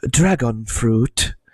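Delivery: odd, weird, comical put-on delivery. Imitating a TikTok girl naming an ingredient: imitating a weird accent. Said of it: "she says it in, like, a really, really funny and weird way".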